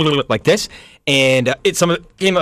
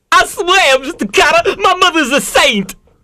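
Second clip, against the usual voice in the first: put-on tough Brooklyn teen voice, pitched higher; 4 dB louder than usual. Doing an impression for a guessing game: Vinnie Barbarino impression. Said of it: "Vinnie Barbarino".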